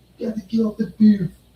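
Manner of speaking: very high, cartoonish put-on cartoon character voice. Retelling what the manager said, in a Stewie Griffin voice.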